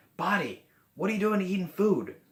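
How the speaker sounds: high, upset scolding tone. Modeling how someone talks to their own body about eating, demonstrating an upset tone. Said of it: "You see that tone of voice I'm using?".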